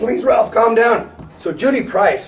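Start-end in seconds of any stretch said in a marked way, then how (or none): 0.0-1.1 put-on very high, frightened, terrified pleading. Retelling executives begging a man in a fit to calm down, imitating terrified pleading. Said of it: "they're all terrified".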